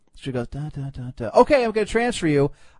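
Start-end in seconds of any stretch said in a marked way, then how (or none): 0.5-1.3 hushed, very soft, much quieter and slower. Retelling how a woman on the phone said the transfer number, very softly. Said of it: "very softly".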